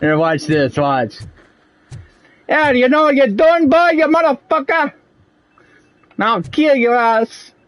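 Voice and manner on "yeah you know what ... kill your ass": put-on Italian-guy accent, pitched up high, menacing. Showing a game character imitation that sounds italian. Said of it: "I sound like a more of an Italian guy".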